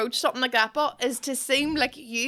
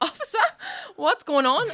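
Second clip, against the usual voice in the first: high, feigned innocent surprise; 5 semitones higher than usual. Retelling being pulled over by police and playing up to the officer: feigned innocent shock. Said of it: "but I played up on it".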